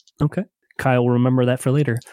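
ordinary talk

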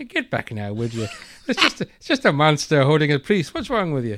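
put-on sing-song Irish village policeman accent. Retelling a film scene, imitating a policeman telling villagers: irish policeman voice. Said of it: "this little Irish policeman going".

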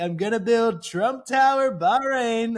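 loud, slow, grand delivery. Retelling doing an impression for a prince on request: Donald Trump impression. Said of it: "he does a great Donald Trump impression".

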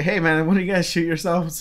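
mock, openly sarcastic, cutting retort. Retelling opening the door after hearing a poof: imitating own sarcastic remark.

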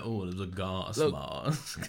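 put-on very slow, stretched-out posh-boy drawl. Mocking the other speaker's pronunciation: Made in Chelsea boy voice. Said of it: "you said it like a made in Chelsea boy".

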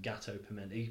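gâteau piment said anglicized, plain English accent. Naming a street food, gâteau piment, in an English accent. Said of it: "In my English accent".

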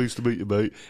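very blokey voice, laid on thick. Another speaker echoes a mate's funny greeting, Danny's blokey voice. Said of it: "in his most blokey voice".

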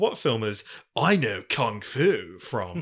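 slow, drawn-out delivery, each word stretched. Joking about watching The Matrix, doing a Keanu Reeves voice. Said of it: "do a Keanu Reeves voice and be like".

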